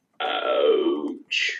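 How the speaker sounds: very low, deep worm creature voice. Retelling a cartoon scene, imitating the worm saying ouch. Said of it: "that's a good impression".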